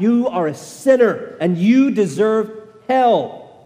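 condemning, accusing tone. Speaker describes Satan accusing believers, acting out Satan screaming. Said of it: "as he screams out".

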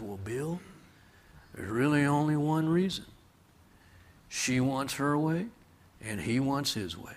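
gentle, gentlemanly, quiet, soft southern drawl. Answering Bill's question, retelling the reply, Mr. Hatch's quiet southern drawl. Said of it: "in his quiet, gentlemanly southern drawl".

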